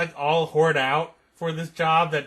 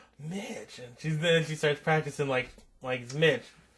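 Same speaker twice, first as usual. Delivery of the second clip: usual speaking voice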